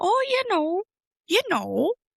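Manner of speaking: Wisconsin-accented voice. Asked what people say in Wisconsin, answering in a Wisconsin accent. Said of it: "what do they say in Wisconsin?".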